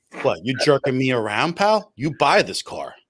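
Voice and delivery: put-on Long Island guy accent. Joining a co-host's bit, the speaker quotes a commercial as a Long Island guy. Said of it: "the guy from Long Island".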